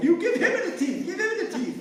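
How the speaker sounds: high, loud shouting.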